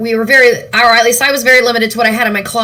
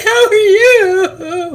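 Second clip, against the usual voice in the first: high, slow mock sobbing, fake crying. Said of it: "Stop crying, [name]".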